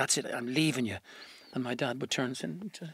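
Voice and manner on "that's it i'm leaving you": put-on speech through gritted teeth. Retelling a mother's words to her husband: imitating talking through gritted teeth. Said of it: "she'd grit her teeth".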